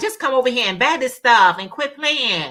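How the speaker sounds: ordinary delivery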